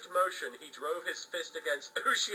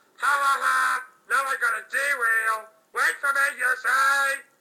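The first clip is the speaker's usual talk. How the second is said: self-assured, confident, maddening "ha ha ha" laugh; 9 semitones higher, 12 dB louder than usual. Narrator reading the tale, the thief laughs as Ushio falls unconscious, Jack Atlas's confident laugh. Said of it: "[name] answered calmly".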